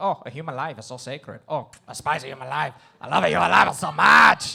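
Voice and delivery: loud put-on Argentine accent. Speaker acting out the Pope answering a question: Pope impression, Argentine accent. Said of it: "like he's from Argentina".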